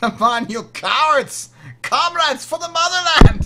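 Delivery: shrill, very loud yelling in bad German accent. Voicing Sergeant Boris out in the field, in a bad German accent. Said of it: "I don't know why he's German".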